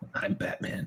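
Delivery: soft, whispered voice. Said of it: "Was that his voiceover voice?".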